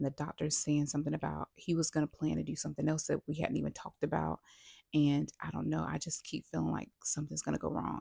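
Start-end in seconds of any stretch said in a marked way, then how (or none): none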